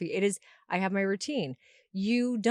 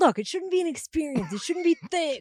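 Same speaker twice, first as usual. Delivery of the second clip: light, teasing, slightly mocking, pitched-up voice; 8 semitones higher than usual. Retelling to the other speaker what they finally told you, do a slightly mocking imitation of them. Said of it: "You do my voice in like a slightly mocking tone".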